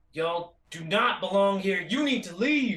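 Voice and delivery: loud commanding voice, swelling with every word. Voicing a character standing on dead bodies, warning an enemy: increasingly loud voice. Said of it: "say something in an increasing volume voice".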